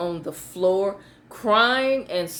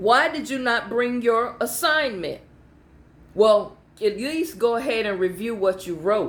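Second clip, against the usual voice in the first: normal talking voice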